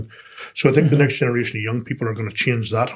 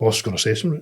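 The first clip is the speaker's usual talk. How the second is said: mock shamefaced, sheepish, embarrassed worried tone. Retelling coming back to work the day after fishing: imitating own sheepish self. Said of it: "all kind of sheepish going".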